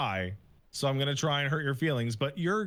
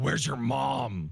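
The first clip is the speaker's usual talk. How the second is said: low, barely voiced growl. Retelling what a player said over proximity chat: imitating a low growl. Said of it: "the guy just growling under his fucking voice".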